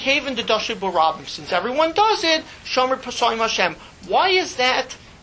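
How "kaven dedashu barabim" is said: ordinary delivery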